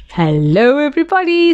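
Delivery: bright, cheery voice. Coming through the hedge, a character greets everybody, cheerful. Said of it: "said Tigger cheerfully".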